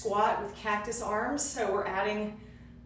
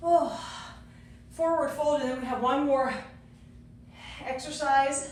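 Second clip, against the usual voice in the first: out of breath, catching breath, breathing hard; 4 semitones higher than usual. Exercise leader right after a countdown, out of breath. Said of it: "Gotta catch my breath".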